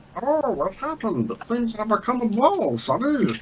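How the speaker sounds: odd, high, soft talking-ball voice. Voicing a character whose head became a ball, talking ball voice. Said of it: "I love the ball voice".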